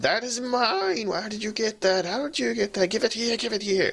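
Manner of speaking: shrill, very high, desperate creature voice. Voicing the creature as it starts screaming at Valeera, desperate voice. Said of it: "In a sort of desperate voice".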